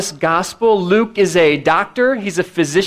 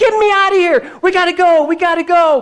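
very high, frantic, panicked cry; 11 semitones higher than usual. Retelling a woman pleading with her husband to leave, imitating panicked crying out. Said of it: "She's like crying out".

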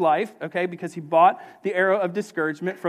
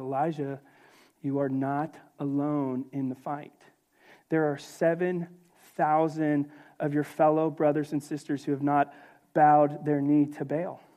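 mock gentle tone, lower and quieter; 4 semitones lower, 5 dB quieter than usual. Retelling the Lord answering the discouraged Elijah: imitating a gentle voice. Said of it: "the Lord looks at him in a gentle voice".

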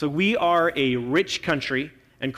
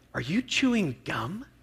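soft, lovely, gently judgmental voice; 4 semitones higher, 5 dB quieter than usual. Retelling his wife leaning over after his speech: put-on lovely, judgy wife voice. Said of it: "a little judgy wife voice".

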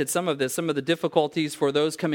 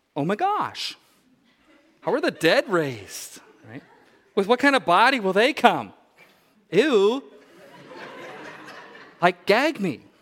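put-on swooping valley girl voice; 5 semitones higher, 3 dB louder than usual. Reading a question aloud the way it comes off, in Valley Girl tone. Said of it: "You almost have to read this in Valley Girl tone".

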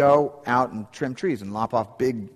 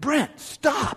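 mock very high, sharp, harsh call; 14 semitones higher than usual. Recalling his dad stopping him near the tree, retelling dad's sharp harsh shout. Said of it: "it was like a loud, sharp, harsh sound".

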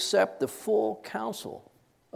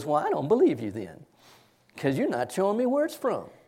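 put-on sweet, syrupy Southern accent. Quoting what she told the group, in a sweet syrupy Southern accent. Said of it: "nice, sweet, syrupy Southern accent".

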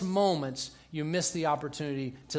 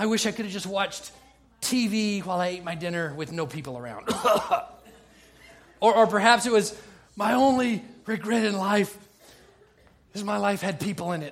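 wheezing, dying voice, pitched up; 5 semitones higher, 5 dB louder than usual. Parodying a movie death scene from emphysema, in a wheezing, dying voice. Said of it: "there's this wheezing, dying moment".

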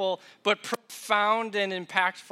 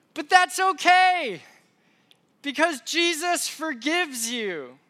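put-on high, loud small child's yell, okay drawn out; 9 semitones higher, 5 dB louder than usual. A parent retells what their four-year-old yelled back, retelling a child's yell. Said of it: "she yells".

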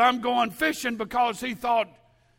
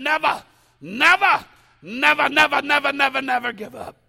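spoken in an English brogue; 3 semitones higher, 6 dB louder than usual. Retelling what a man would have said, in his English brogue. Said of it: "and his English brogue".

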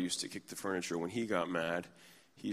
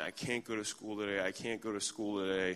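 mock childlike sobbing, quieter and slower; 4 dB quieter than usual. A parent retells their child refusing to go into school, imitating a child sobbing. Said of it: "She's sobbing".

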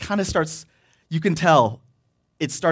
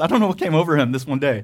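plain

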